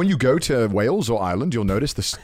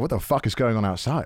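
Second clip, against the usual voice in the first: ordinary delivery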